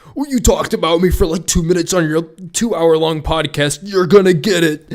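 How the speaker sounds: wounded, offended, indignant, upset complaining. On a podcast, imagining a man's reply to being discussed, mock-upset rant. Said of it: "gonna get upset about us talking about him".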